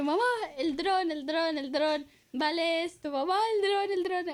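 mock, high, insistent pleading, repeated and pressing. Retelling asking mom again and again for a drone: imitating own past pleading. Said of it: "entonces yo".

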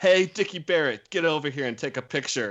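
loud, high-pitched yell. Retelling how the bass player called someone over: imitating Matt yelling. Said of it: "And he just yells".

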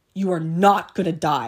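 mock very loud, firm, stern voice. Retelling her mom's reply when she said she felt she would die: imitating stern Kathy voice. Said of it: "in her stern Kathy voice was like".

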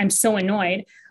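usual speaking voice

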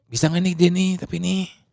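secretive tone, like sharing a secret behind a hand.

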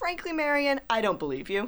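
angry dismissive reply. Cadence speaks to Marion about the thing in the basement: angry. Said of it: "why are you so angry at me?".

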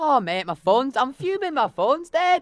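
put-on Irish accent. Mocking the other speaker's phone story: imitating an irish accent. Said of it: "What is the accent?".

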